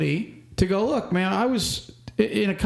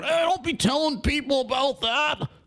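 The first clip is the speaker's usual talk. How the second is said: put-on good-ol'-boy trucker voice, pitched up; 7 semitones higher than usual. Talking to trucking companies about DOT audits, voicing a trucker's reply in a redneck trucker voice. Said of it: "That was my redneck trucker voice".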